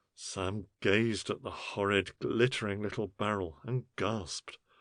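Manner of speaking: ordinary delivery, nothing marked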